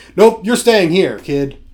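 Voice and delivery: mock, put-on patronizing, condescending tone. Describing a senior figure brushing off a kid, mock-condescending. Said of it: "It's like condescending".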